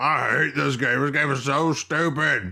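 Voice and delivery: slow, drawn-out manner of talking. Speaker complains about a game, imitating the co-host's voice. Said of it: "That's exactly what you sound like".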